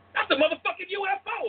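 very high, loud exclamation. Showing how someone thinks on seeing a UFO: Samuel L. Jackson voice. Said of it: "that Samuel Jackson is in your head".

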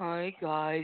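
flat, low monotone with zero inflection. Speaker imitates how the other person greets when first coming on: mock flat, no-inflection greeting. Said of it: "There's no inflection".

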